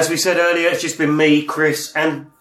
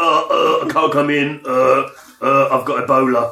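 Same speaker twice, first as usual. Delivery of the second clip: imitated, put-on sick-sounding voice. Teasing Ben about phoning in to work, doing Ben's fake sick voice. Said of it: "that when you're phoning to work going".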